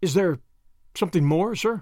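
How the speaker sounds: ordinary delivery, nothing marked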